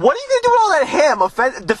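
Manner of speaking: defensive, protective tone, high-pitched and swooping. The speaker quotes the listener's earlier question back at them, mock-defensive.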